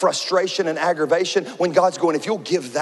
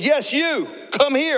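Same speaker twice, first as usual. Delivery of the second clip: play-acted, intense delivery, very high; 9 semitones higher than usual. Retelling a TSA agent singling him out of the line, imitating an intense command. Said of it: "she's really intense".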